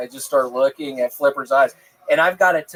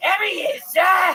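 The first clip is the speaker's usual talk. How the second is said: put-on Australian twang, very high pitched. Playing a character answering a question about where something is sold, with a put-on regional voice; Australian accent. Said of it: "That's my Australian accent".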